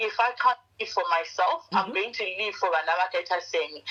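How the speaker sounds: ordinary talk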